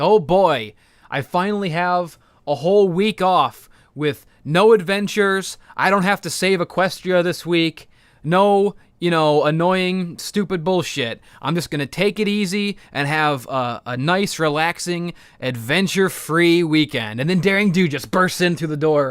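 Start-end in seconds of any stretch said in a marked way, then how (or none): none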